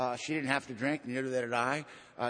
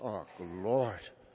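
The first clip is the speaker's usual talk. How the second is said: low, deep Irish brogue of a priest; 5 semitones lower than usual. Retelling a talk with Father Bill, quoting his reaction in a deep Irish brogue. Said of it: "He had this deep Irish brogue".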